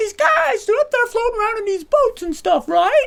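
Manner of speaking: voice jumps way up, very high, rising questioning tone. Retelling a student's question in class: imitating Jamie's high-pitched voice. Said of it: "going high-pitched with his voice whenever he asked questions".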